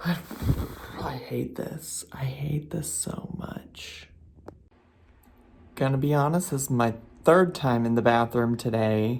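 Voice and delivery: speaking in a whisper. Complaining about stomach pain while someone sleeps nearby: whispering. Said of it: "I'm also whispering because Noel's still asleep".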